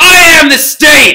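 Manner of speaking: very loud, very high, kingly royal shout. Retelling how a king cut off a noble: imitating a king yelling. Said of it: "he just yelled at him".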